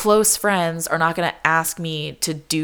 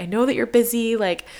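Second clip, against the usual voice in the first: high, apologetic, stressed voice. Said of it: "my friends are really apologetic".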